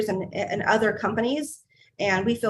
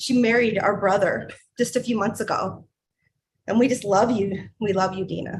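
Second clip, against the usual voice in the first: choked up, about to cry. A host welcomes Dina, who married their brother, about to cry. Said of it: "I'm just going to cry".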